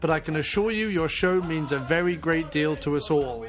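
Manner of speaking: normal talking voice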